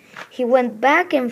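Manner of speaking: ordinary delivery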